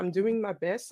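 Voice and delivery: ordinary talk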